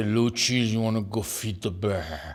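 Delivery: low, macho tough-guy swagger. Retelling a cousin's invitation to feed the bear: imitating cousin Hugo's voice. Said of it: "Hugo talked like this".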